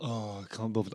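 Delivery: put-on listless teenage boredom, very low and very quiet. Describing a film character called Ennui: Ennui voice, bored teenager. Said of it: "very kind of, like, teenage".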